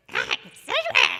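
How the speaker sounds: very high, very loud dog puppet voice. Recalling a childhood puppet's voice done at bedtime, Cedric the puppet dog's voice. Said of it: "he would talk like that".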